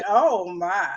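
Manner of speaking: Southern accent. Showing how a favourite phrase comes out: southern accent. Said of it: "I say it with a Southern accent".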